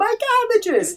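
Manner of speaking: very high-pitched screamed cry. Recalling a show's running gag, the speaker imitates the Cabbage Merchant's scream. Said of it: "he screams".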